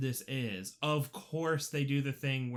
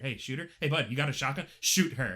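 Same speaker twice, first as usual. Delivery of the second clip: mock muttering under the breath; 4 dB louder than usual. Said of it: "under my breath going".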